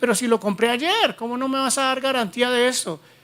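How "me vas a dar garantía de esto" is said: ordinary talk, nothing marked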